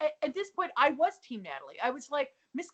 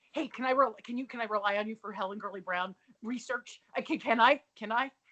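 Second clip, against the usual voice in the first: mock frantic, panicked, stumbling, tripping over the words; 3 semitones lower than usual. Acting out how the other speaker's texts read: imitating someone panicked. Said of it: "always in a panic".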